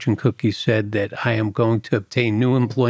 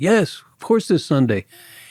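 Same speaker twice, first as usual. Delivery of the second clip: mock frustrated, impatient shouting, high and exasperated; 6 semitones higher than usual. Retelling what a man asked, the speaker is retelling a yell. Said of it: "He's yelling".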